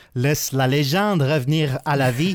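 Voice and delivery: bad, clumsy Quebec French accent. Repeating the game's line in French, bad Québécois accent. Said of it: "très mauvais accent québécois".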